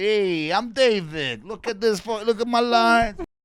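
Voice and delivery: very loud, high-pitched, drawn-out belting voice. Joking about how a statue would talk: imitating the statue of David. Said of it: "this is how he spoke".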